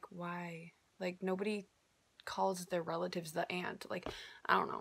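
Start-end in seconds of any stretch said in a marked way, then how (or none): 0.1-3.9 hushed, exasperated whisper of disbelief. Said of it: "and I'm like".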